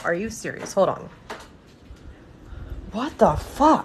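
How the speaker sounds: hushed, breathy, angry whisper. Reacting as something keeps falling over during a live stream: angry. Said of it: "I'm so pissed".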